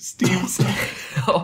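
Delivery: laughing, giggling, stumbling over the words.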